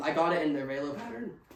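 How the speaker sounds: cracking voice mid-sentence. Speaker praising a Kuiu purchase to viewers, voice cracking. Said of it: "Excuse the voice crack".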